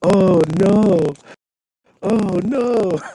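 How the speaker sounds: high, slow, stretched-out, drawn-out ape voice. Retelling a clip from a Planet of the Apes movie: imitating a Planet of the Apes ape. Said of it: "I thought you were doing the accent".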